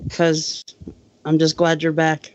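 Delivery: completely level, flat monotone, no lift. Answering why you said a co-host's name that way, monotone. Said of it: "in the most monotone voice ever".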